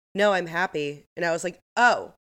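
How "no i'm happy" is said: level, deadpan monotone with no rise in pitch. Speaker quotes a woman replying about her pregnancy news, imitating a flat monotone. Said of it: "Very monotone".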